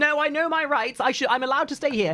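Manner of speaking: entitled, defensive tone. Explaining that the customer was asked to leave: imitating a defensive entitled Karen. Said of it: "get defensive saying".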